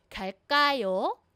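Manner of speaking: rising pitch on the last syllable of kayo. Explaining question intonation, say the phrase with the pitch rising on kayo. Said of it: "yung intonation ko, yung tone ko po, pag may tanong, tumataas, umaangat po yung dulo".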